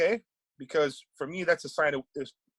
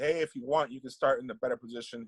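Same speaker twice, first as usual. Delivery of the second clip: mock falsely polite, sarcastic, overly generous tone; 3 semitones lower, 4 dB quieter than usual. Retelling an offer made to an opponent after going out of bounds: imitating own sarcastic offer.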